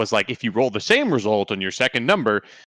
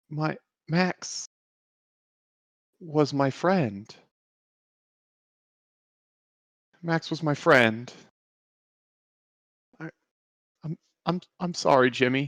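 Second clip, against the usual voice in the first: tearful, stammering voice on the verge of tears; 4 semitones higher, 4 dB quieter than usual. Voicing a character whose eyes well up, apologizing to another character: tearful, on the verge of tears. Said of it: "his eyes are actually just starting to well up with, with tears".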